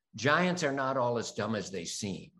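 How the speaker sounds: plain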